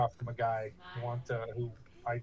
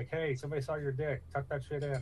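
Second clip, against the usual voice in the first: normal talking voice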